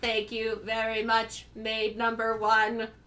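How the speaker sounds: commanding robot character voice. Voicing the master thanking the maid. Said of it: "He goes".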